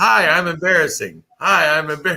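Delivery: high, repeated, projected voice. Retelling what he said to people all through a store: retelling his own past words. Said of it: "So I went through the entire store saying".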